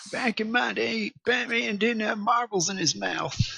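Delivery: very high, drawling Southern voice. Making fun of someone by retelling what he said, sounding like Bill Clinton. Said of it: "Why did I just sound like".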